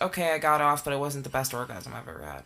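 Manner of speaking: ordinary talk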